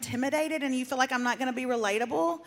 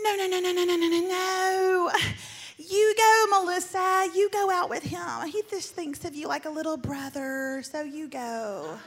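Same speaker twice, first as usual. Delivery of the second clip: put-on voice of a woman, higher; 5 semitones higher than usual. Retelling Janet insisting that Melissa go out, doing Janet's voice. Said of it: "I'm doing Janet's running voice".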